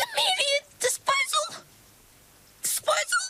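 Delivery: very high, squeaky voice, bursting out. She echoes the words she just heard, voice high and squeaky. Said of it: "Her voice went all high and squeaky".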